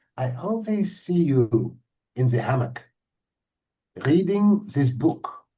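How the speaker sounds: put-on bossy, commanding, authoritarian German accent. Retelling a stranger who came up to them in the dining area, authoritarian german accent. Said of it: "in this kind of authoritarian German accent".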